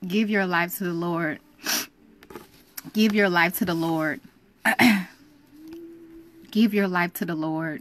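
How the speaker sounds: overcome, choked-up, emotional, fighting back tears. Speaker encouraging young people, trying to pull it together, getting emotional. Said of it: "I'm gonna pull it together".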